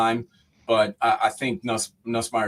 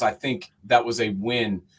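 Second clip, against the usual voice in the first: ordinary talk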